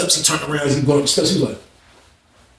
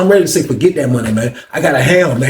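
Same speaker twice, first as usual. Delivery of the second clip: usual speaking voice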